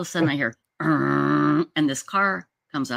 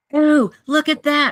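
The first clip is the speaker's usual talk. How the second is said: loud, very high shrieking scream; 12 semitones higher, 7 dB louder than usual. Retelling seeing what a man left behind: imitating own past screaming. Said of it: "And I'm screaming".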